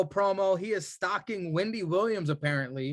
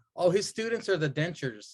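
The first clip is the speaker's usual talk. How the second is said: plain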